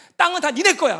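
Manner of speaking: loud, high, angry, exasperated pleading shout. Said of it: "또 너무 화가 나갖고".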